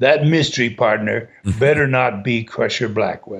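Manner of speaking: put-on dramatic, theatrical delivery in a Russian accent. Telling a story about Malenko, quoting him in his Russian accent. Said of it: "With his Russian accent".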